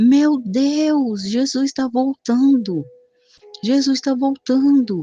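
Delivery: high cry, "Deus" stretched long. Speaker retells what they shouted at the moment they describe: imitating own past shouting. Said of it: "e eu comecei a gritar".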